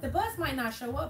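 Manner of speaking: pressuring, sweet-talking tone.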